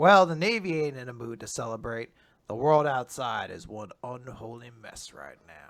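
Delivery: very low, cool guy voice. Quoting Aramaki as he approaches the party: cool guy voice as Aramaki. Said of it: "I gave him a cool guy voice".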